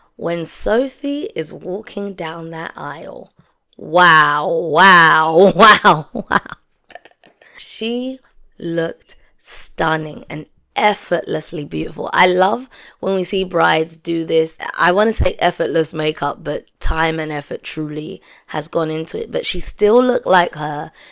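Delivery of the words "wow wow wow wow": loud put-on catchphrase-style "wow". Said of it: "in the words of my good friend Joseph".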